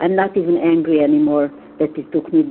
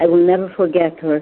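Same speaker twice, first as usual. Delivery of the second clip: normal talking voice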